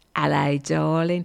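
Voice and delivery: put-on Cockney accent. Host near the end of the show greets listeners in a Cockney accent. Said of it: "before I go full Cockney".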